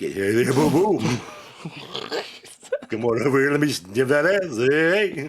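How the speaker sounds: high-pitched cartoon bear voice. Joking around about cartoon characters, doing a Yogi Bear voice. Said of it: "But Yogi".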